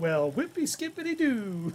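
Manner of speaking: loud, poorly done put-on Canadian accent. Speaker, admitting to being bad at accents, tries a Canadian one: bad Canadian accent. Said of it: "That's Canadian, right?".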